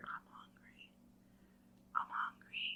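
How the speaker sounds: put-on whisper. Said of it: "somebody, like, whispering in my ear".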